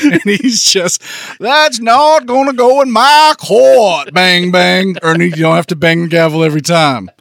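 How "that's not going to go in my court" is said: slow, high put-on TV commercial spokesman accent. Imitating the judge's courtroom lines: Colonel Sanders accent. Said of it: "he was doing a Colonel Sanders K F C commercial".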